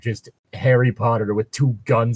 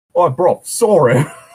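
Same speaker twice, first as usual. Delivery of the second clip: mock English regional accent, higher and louder; 7 semitones higher, 8 dB louder than usual. Imitating the accent the other reader just used: imitating an English regional accent. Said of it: "the accent you used".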